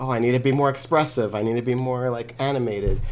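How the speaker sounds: ordinary talk, nothing marked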